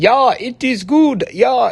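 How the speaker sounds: put-on slow, robotic, mechanical Swiss German accent. Imitating how a man he helped with women used to talk, robotic Swiss German way of talking. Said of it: "he talked kind of like this".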